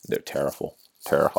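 whispered, breathy, emphatic voice. Complaining that the numbers are terrible, sounding like Charles Barkley. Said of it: "I sound like Charles Barkley".

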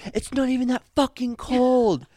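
very high, high-pitched yell. Retelling what a stranger yelled out of her car window, retelling a yell. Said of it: "She yells out the window".

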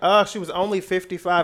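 breezy, offhand tone.

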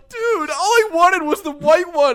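put-on shrill, loud, slow, high, drawn-out crying. Acting out a friend's reaction to the wrong car color: mock crying. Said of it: "You start crying".

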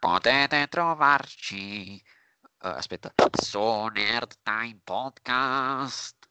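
nasal voice with nose pinched. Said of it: "dobbiamo dire dove possono trovarci su Instagram con la voce di [name]".

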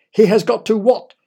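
loud, high shouting. In a story, a boy's father presses the wizard for an answer, shouting. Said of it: "shouted Oliver's father".

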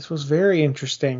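ordinary talk, nothing marked

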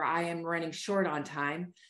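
ordinary talk, nothing marked

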